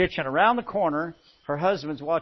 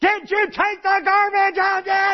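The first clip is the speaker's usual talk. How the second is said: very high, shrill bellowing voice; 7 dB louder than usual. Telling listeners how a wife calls to her reminiscing husband, bellowing wife voice. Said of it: "your wife is bellowing at you".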